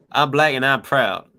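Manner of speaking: attempted American accent, almost Southern. Saying a line requested in the chat: put-on American accent, almost Southern. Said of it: "it was almost kinda Southerner".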